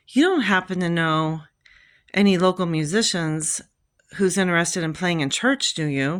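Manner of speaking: ordinary delivery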